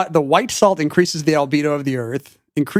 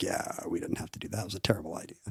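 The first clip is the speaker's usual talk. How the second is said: quiet, low delivery. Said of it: "Eisenhower was like".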